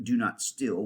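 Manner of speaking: ordinary delivery, nothing marked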